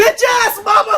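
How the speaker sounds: screaming.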